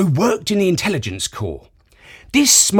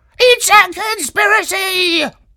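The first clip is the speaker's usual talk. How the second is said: very high, squawking parrot-like voice. A narrator reads a bird character's reply to a dog: squawking bird voice. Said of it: "he squawked".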